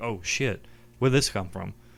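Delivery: ordinary talk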